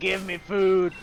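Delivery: deep gruff creature voice. Describing the creature begging for food, speaker voices it: deep gruff Baneri voice. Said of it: "deep, gruff voice come out of the Baneri".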